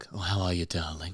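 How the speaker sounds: low, deep, sultry and slightly sexy voice. Imitating a woman from a dating show: deep voice imitating Lucinda Light. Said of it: "she's got a voice like kind of a deep".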